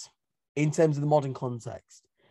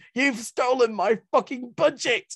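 put-on enraged scream, pitched very high; 9 semitones higher, 4 dB louder than usual. Retelling someone storming into Number 10, retelling a scream. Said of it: "Gordon storms into number 10 and screams".

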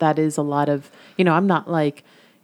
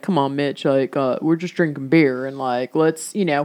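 put-on male voice, much lower; 2 semitones lower than usual. Speaker acting out how a listener's guy friend would reply, imitating a guy friend. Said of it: "Say it again".

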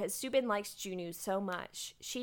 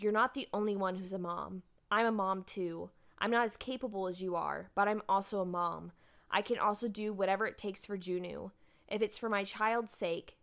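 ordinary talk, nothing marked

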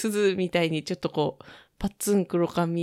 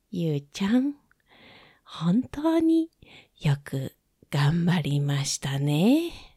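put-on very slow, gentle grandma voice. Doing an impression for the listeners: slow, talking-to-you granny voice. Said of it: "ゆっくりね、語りかける感じのおばあちゃん".

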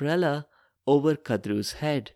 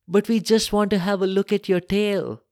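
hurried, pitched-up cry; 6 semitones higher than usual. Narrator reads Kadru interrupting the other speaker: crying out in a hurry. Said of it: "Kadru cried out in a hurry".

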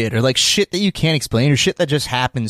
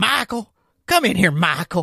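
imitated odd drunk man voice; 7 semitones higher than usual. Retelling how a drunk man at the office called him over, mimicking his put-on voice. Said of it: "he was like using a different voice".

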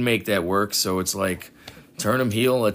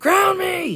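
mocking, obnoxious put-on wrestler yell, higher and louder; 5 dB louder than usual. Retelling what the wrestler said on camera: imitating Xavier Woods yelling. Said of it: "obnoxious shit yelling into the camera".

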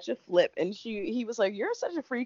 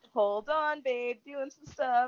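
put-on sing-song voice, higher; 4 semitones higher than usual. Retelling a reality show scene, quoting the boyfriend: imitating a sing-song voice. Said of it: "the sing song stops".

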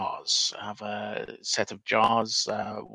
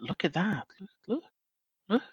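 very high, soft half-whisper; 10 semitones higher, 4 dB quieter than usual. Speaker acts out what they keep saying to the jar, half-whispering. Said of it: "I just keep whispering to the jar".

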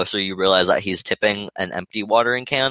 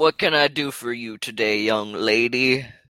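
put-on aged old man character voice; 4 semitones higher than usual. Role-playing, greeting a young lady about her symptoms, in an old man voice. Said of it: "now you're an old man".

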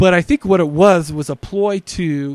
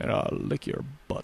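put-on movie star voice, groggy and just woken up; 14 dB quieter than usual. Asked to do one, a guest gives a Sean Connery impression. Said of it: "Sean Connery right when he wakes up".

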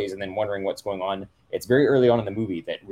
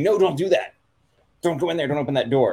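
high, loud hollering; 7 semitones higher, 4 dB louder than usual. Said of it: "yelling at the T V".

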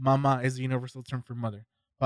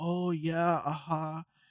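put-on old woman's Chinese accent; 4 semitones higher, 4 dB quieter than usual. Describing a woman who relearned english, the speaker does an old chinese lady accent. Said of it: "in a Chinese accent where it's like this old Ch- Chinese lady".

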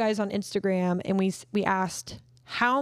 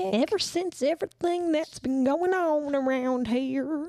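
put-on elderly Southern man's voice, pitched up; 6 semitones higher than usual. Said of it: "go-to voice is always an old southern man".

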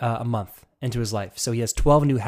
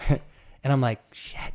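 usual speaking voice

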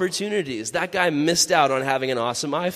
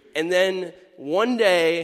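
plain

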